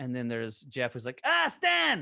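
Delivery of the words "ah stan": put-on Irish voice, much higher and louder. Listing the voices he does, trying out one of the Van Gundys, Jeff Van Gundy impression. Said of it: "a little higher pitched and sort of Irish".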